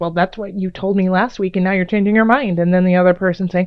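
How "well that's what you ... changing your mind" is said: mock snippy, bickering tone. Acting out one partner in a petty quarrel: mock snippy tone. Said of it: "being snippy with one, one another".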